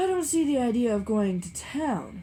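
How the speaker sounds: fierce, savage outburst, loud and slow. Narrator reads Tom breaking out at Gatsby: savage outburst. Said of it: "broke out Tom savagely".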